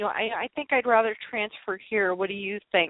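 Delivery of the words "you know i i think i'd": ordinary delivery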